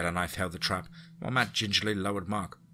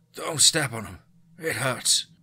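muffled croaking, pitched up; 5 semitones higher, 5 dB louder than usual. Narrator reads a voice from beneath the snow after a trap goes off: croaked, muffled. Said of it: "Croaked out a muffled voice".

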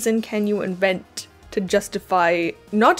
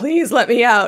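put-on character scream; 2 semitones higher, 5 dB louder than usual. Retelling a story character trapped in a wall: imitating a character screaming. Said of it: "when Fortunato just starts screaming".

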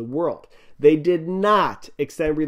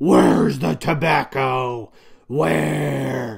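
rough, creaky caped-hero voice, very slow, drawn out; 3 dB louder than usual. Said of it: "That's my Batman impression".

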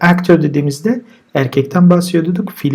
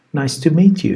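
strongest stress placed on meet. Teaching the greeting nice to meet you: main stress on meet. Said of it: "daha çok vurgu meet'tedir".

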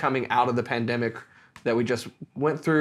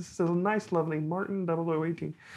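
put-on frog voice, higher, quieter and slower; 5 semitones higher, 7 dB quieter than usual. Doing a review of a Martin 0018 as Kermit the Frog, in a Kermit the Frog voice. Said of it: "We should just like do a review as Kermit the Frog here".

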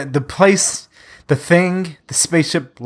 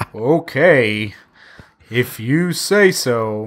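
put-on, mock sarcastic tone. Retelling how a movie cop answers calls about killer clowns: imitating a sarcastic cop. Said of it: "he was just saying every line so sarcastically".

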